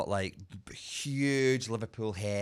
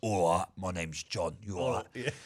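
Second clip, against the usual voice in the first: put-on full-on, laid-on Essex accent; 2 semitones lower than usual. Describing Love Island couple Hannah and John, imitating John's Essex accent. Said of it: "he was like a proper Essex".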